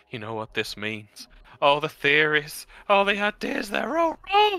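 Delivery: high-pitched muttering in character voice. Voicing a character clutching a leg on the floor: muttering to himself. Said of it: "Just muttering to himself".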